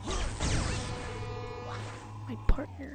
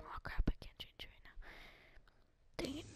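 hushed whispering, much quieter; 9 dB quieter than usual. Gamer recording a Disc Jam video just after waking up, whispering. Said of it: "Sorry that I'm whispering".

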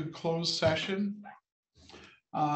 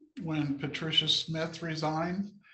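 ordinary delivery

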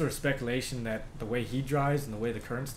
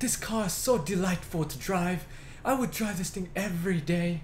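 showy TV presenter voice, high, pitch rising and falling dramatically; 6 semitones higher than usual. Imitating a man on a car show, overly dramatic, voice rising and falling. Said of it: "You gotta raise and lower your voice at certain times because he makes it really, really, really dramatic".

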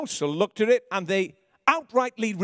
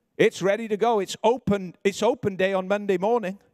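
ordinary talk

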